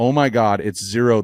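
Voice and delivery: ordinary delivery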